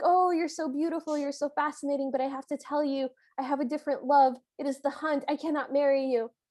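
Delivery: put-on parody flirtatious delivery. Retelling how the prince pretends to chat up his friend: imitating parody flirting. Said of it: "beautiful parody flirt ever".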